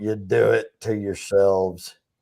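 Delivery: very gruff, rough, low voice.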